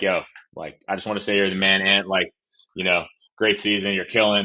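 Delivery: ordinary delivery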